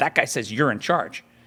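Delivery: mock insistent, confrontational, screaming. Telling how they tried to get into show business, retelling a scream. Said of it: "I scream at him".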